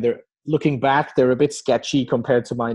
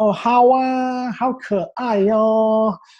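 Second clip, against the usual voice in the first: put-on feminine Chinese speech, much higher; 9 semitones higher than usual. Speaker mimics how he used to talk in Chinese, imitating feminine Chinese speech. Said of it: "speaking like a female kind of Chinese".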